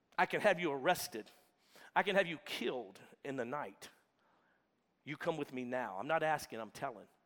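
mock authoritative, no-nonsense, commanding, menacing tone. Imagining the man exerting his authority instead of begging: acting out an authoritative threat. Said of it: "trying to exert his authority".

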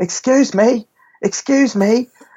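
mock very high-pitched, stretched-out, drawn-out screaming. Retelling a woman whose shopping trolley was taken: imitating a woman screaming. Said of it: "she's screaming and saying".

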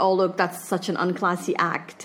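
plain

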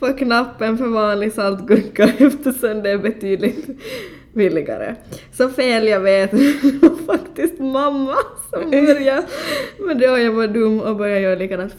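reading aloud through laughter. Speaker reads someone's confession aloud, laughing while reading. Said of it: "Förlåt att jag skrattar".

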